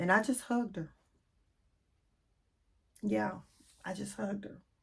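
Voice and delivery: choked-up voice catching on held-back tears. Speaker recalling hugging a woman who started crying on the steps: tearing up. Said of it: "I'm kind of tearing up a little bit".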